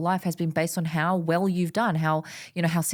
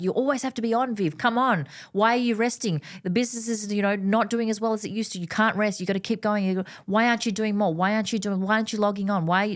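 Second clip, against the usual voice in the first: put-on demanding, insistent tone; 3 semitones higher than usual. Speaker voicing the demanding voice in her head, imitating a demanding inner voice. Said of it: "my demanding voice".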